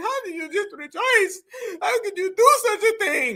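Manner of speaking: high, scared voice cracking as it goes. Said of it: "Her voice is cracking".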